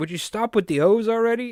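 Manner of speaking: very high Italian mobster voice. Retelling an It's Always Sunny scene: imitating Italian mobsters. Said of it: "these, like, Italian mobsters".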